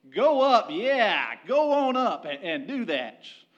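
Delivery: dripping sarcasm, swooping, drawn way out, very slow. Imagining Micaiah daring Ahab to go, mock-sarcastic Micaiah. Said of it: "probably the most sarcastic tone possible".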